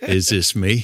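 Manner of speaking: fake cowboy movie drawl. Doing a John Wayne impression after being asked for one: John Wayne impression. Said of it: "How's your John Wayne these days?".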